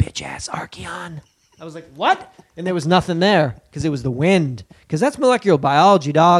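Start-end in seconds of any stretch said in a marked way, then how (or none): 0.0-1.2 snide, snarky whisper. Retelling what a man whispered at him, a whispered insult. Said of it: "He like whispered".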